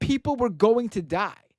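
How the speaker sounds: play-acted, high, very emotional screamed outburst. Retelling a movie scene where Superman screams at Lois Lane: imitating Superman screaming. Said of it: "he screams at her".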